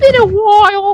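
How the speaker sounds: put-on polite British accent. Retelling what a friend said about the slow service: polite british accent. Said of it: "super polite British ass is like".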